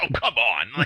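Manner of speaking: fed-up, exasperated snap, patience gone. Retelling how the moderator snapped at a guest: imitating someone snapping in exasperation. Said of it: "he just snaps with this guy".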